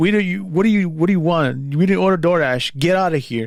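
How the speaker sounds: menacing, hostile, threatening, looking-for-trouble tone. Retelling a hostile man confronting the speaker: mock-threatening tone. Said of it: "in a very threatening tone".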